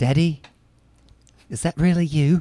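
put-on high Australian accent in a princess-like voice. Acting out a movie scene line as a princess: australian princess voice. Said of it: "Australian princess".

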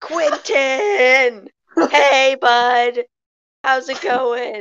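bellowing yell at full volume, top of lungs. Role-playing a character calling out to someone sneaking behind: yelling at top of lungs. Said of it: "I yell at the top of my lungs".

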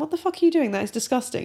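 hard, unshouted stern tone. Recounting how the listener scolded some kids, imitating an intense, unshouted rebuke. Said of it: "you didn't shout at them. You just went".

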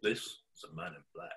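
deep, hushed, soft, seductive radio voice. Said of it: "That was a sexy voice".

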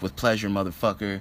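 usual speaking voice

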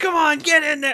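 shrieking, shrill, full-volume excited yell. Joining a story about a mom watching TV, imitating her yelling. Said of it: "my mom like stands up and yells".

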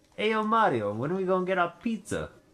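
very high-pitched Italian gangster voice. Imitating how Luigi sounds in the movie: Luigi as Italian mafia gangster. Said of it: "That's what he sounds like".

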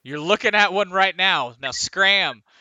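yelling, not screaming. Game master voicing a character who looks down at the party, loud yelling voice. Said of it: "he yells. It's not screams, but loud voice".

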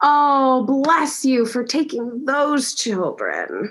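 put-on very slow, swooping, gushing old person voice. Retelling what an elderly stranger says on seeing the kids: imitating an elderly person. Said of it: "They'll say it like that".

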